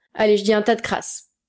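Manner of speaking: ordinary delivery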